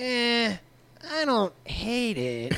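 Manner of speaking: low-key, very slow. Showing how a trainee reacts: imitating Crotch. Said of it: "a little more like".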